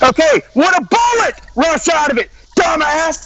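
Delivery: shouting angrily. Pressing another speaker with a yes or no question: shouting angrily. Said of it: "You were shouting".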